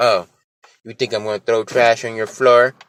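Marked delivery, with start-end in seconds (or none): none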